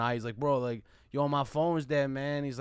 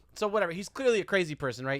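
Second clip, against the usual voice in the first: ordinary talk, nothing marked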